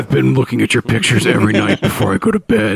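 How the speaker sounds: unsettling, creepy, obsessive admirer tone. Imitating what the stalker guy really thinks: imitating a creepy stalker. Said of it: "when he's actually like".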